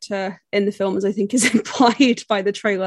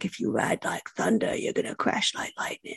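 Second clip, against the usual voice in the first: gravelly, hushed whisper; 10 semitones lower, 9 dB quieter than usual. Quoting a line from a film trailer: Ben Mendelsohn gravelly voice. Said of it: "distinctive gravelly voice".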